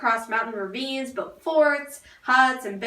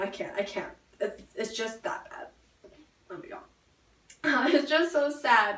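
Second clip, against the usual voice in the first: whispered, breathy fake sobbing; 5 dB quieter than usual. Ending a mock news report on soldiers' deaths: mock crying. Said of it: "I'm gonna cry again".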